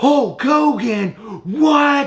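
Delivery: put-on very high, animated excited outburst, what drawn out. Retelling a TikTok clip about wrestler action figures: imitating animated excitement. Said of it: "gets all animated and excited".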